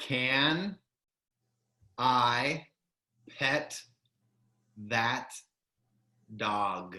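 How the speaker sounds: slowed-down, slow-paced delivery. Repeating a phrase slower on another try, saying it slowly.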